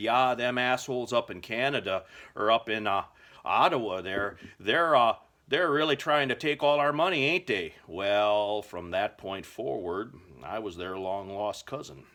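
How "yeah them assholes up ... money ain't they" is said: put-on Canadian accent, pitched up and loud. Replying to the biggest guy at the counter in his best Canadian accent. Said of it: "I pulled my best Canadian accent out".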